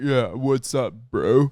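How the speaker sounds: faked low voice, forced from the throat. Retelling how a boy the same age greeted people, imitating a forced deeper voice. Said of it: "he was trying to make it sound deeper".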